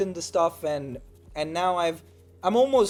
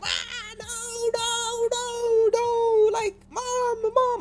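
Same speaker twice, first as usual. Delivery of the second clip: put-on play-acted child's wail, very high, slow, drawn out. Retelling being driven away from grandmother as a child, reenacting own past crying. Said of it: "I'm crying".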